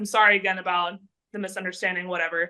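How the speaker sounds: normal talking voice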